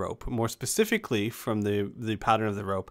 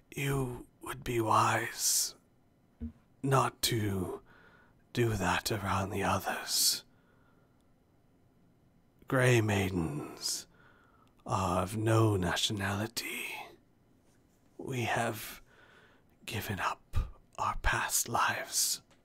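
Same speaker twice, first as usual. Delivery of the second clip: words squeezed out with great strain; 4 dB quieter than usual. A grey maiden speaks to a player character who has just put down a tray: very strained voice. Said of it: "a very strained voice comes out and says".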